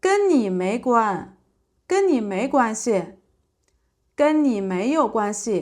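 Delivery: ordinary delivery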